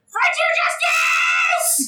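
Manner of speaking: very high, squealed war cry. Voicing a character leaping onto a foe: screaming in character. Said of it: "jump onto him while screaming".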